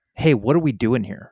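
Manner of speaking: mock combative tone, playful and jokingly aggressive. Acting out asking company leadership a blunt question: jokingly aggressive. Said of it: "I say that in a jokingly aggressive way".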